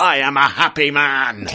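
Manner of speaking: loud bellow. Describing a Poirot story, quoting a character's line: retelling a bellow. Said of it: "He basically bellows".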